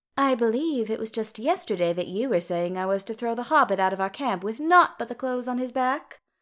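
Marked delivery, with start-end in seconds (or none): none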